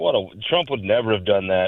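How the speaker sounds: normal talking voice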